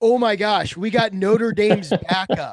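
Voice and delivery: mock-sarcastic, put-on sarcastic tone. Recounting a message sent to a podcast group chat, retelling a sarcastic text. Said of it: "sarcastically went".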